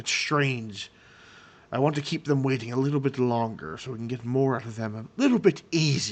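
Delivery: goblin character voice. Voicing a goblin overheard in a tunnel: goblin speaking. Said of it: "this is in Goblin".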